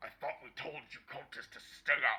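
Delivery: voice muffled behind door. Voicing someone inside a barricaded room answering a request to enter, muffled voice behind door. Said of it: "you hear a muffled voice from inside saying".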